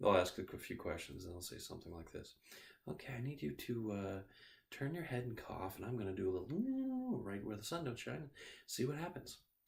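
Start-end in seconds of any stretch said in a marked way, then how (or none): 2.9-9.4 mock gentle, calm, soothing, sing-song doctor voice. Describing how doctors talk to patients, imitating a doctor's soothing voice. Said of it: "the doctor talks to us in a very calm, soothing voice".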